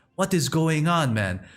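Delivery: put-on Haitian accent.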